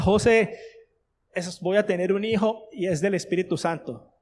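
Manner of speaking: ordinary talk, nothing marked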